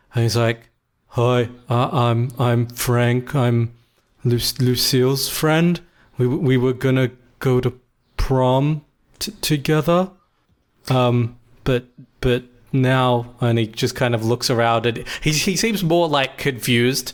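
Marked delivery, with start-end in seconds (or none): 1.1-10.1 deep, slow, low rumble from the chest. Storyteller voicing the teenage Frank, in a deep, rumbling voice. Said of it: "his voice is like deep for a teenager".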